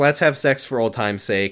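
plain

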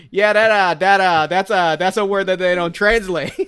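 put-on thick Boston accent. Retelling a cartoon character's line about an untranslated word: Guy Gardner thick Boston accent. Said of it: "the thickest Boston accent".

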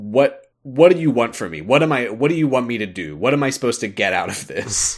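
loud, mock frustrated outburst, losing his cool. Retelling a game character losing his cool: imitating Sora yelling. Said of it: "just starts yelling at no one in particular".

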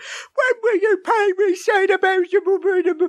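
very high, hammed-up, overacted stage-style reading. Imitating a college actor in a play hamming it up: imitating a hammy overacting actor. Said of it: "a college actor really hamming it up".

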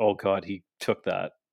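ordinary delivery

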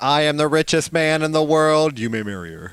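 speaking in a robotic voice. Playing a robot answering a girl's parents, in a robot voice. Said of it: "Why do robots talk like that?".

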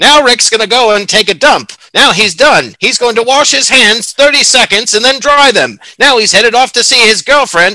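high, loud 1930s transatlantic narrator voice. Imitating an imagined narrator describing someone's everyday routine, in a 1930s transatlantic accent. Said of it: "talking in the 1930s transatlantic accent".

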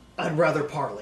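gravelly, rough-edged robot butler voice. Voicing a damaged droid who offers to negotiate: gravelly protocol droid voice. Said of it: "He sounds strangely like the protocol droid again, but with the same gravelly voice".

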